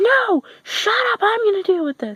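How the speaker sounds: very high, raging angry yell. Retelling a friend snapping at her mother: imitating someone yelling angrily. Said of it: "my friend just looks at her mom and goes".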